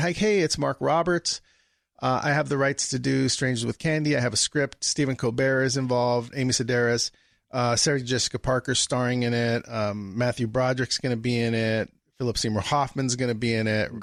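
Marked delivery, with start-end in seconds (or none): none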